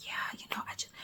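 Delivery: very quiet, breathy, hushed whisper. Describing a woman recording a video in her house, imitating her whispering. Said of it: "she's over here like whispering".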